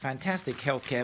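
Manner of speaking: normal talking voice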